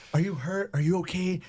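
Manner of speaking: put-on freaked-out, very high, panicked alarm. Retelling checking on a crying woman in the gym, acting out own panic. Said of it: "and I'm freaking out".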